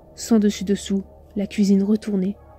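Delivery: plain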